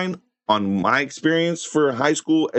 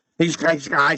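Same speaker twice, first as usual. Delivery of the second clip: put-on speech impediment, mimicking impaired speech. Show how he used to talk back then, imitating someone with speech problems. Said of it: "he had speech problems... he used to talk like this".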